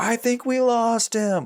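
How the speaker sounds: high, loud, slow panicked scream. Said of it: "they scream at each other".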